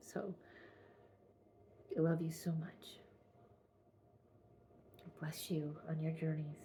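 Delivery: voice catching with emotion. Saying goodbye to viewers while choked up with emotion. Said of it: "I'm getting choked up".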